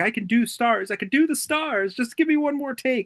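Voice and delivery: very high, sobbing, crying voice. Retelling a movie scene after Roger chases the director out: imitating Roger crying.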